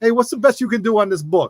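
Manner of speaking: put-on thick Jersey New York accent. Retelling a kid haggling with Roger over a book, in a thick Jersey New York accent. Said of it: "With this thick, like Jersey, New York accent".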